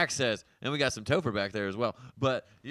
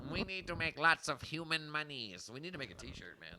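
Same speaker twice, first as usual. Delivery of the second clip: put-on cartoon skeleton voice, higher and quieter; 3 semitones higher, 11 dB quieter than usual. Joking about making money from merch: Skeletor voice. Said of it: "I'm just doing a Skeletor verse".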